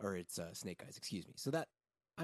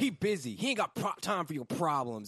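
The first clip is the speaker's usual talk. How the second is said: put-on screaming voice, higher and louder; 6 semitones higher, 9 dB louder than usual. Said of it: "And he's just screaming it".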